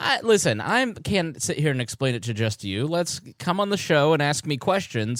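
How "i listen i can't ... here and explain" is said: ordinary delivery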